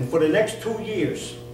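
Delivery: put-on North Jersey accent.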